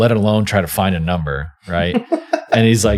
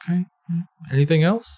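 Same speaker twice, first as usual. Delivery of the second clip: real quiet, soft, very high-pitched voice; 9 semitones higher, 5 dB quieter than usual. Retelling the doctor's reply after his confession, imitating the doctor speaking quietly. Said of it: "just real quiet".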